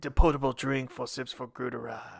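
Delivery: low, soft French animated-movie trailer voice. Reading a drinking-game rule aloud, French Despicable Me trailer voice. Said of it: "say it in like the French Despicable Me voice".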